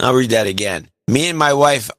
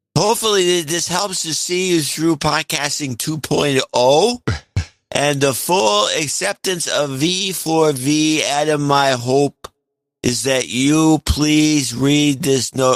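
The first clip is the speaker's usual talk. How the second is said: put-on drunken, slurring-style voice; 2 semitones higher than usual. Reading a listener's donation note on the air, asked for a drunken voice. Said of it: "your best drunken donation voice".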